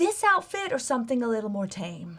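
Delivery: soft whispering. Replying in character to the other players: whispering back. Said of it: "kind of whisper back".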